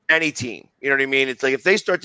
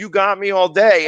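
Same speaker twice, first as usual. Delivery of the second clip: yelling, higher pitch; 6 semitones higher, 4 dB louder than usual. Retelling yelling at a player from the front row: imitating own yelling. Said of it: "I'm yelling at Drew Brees".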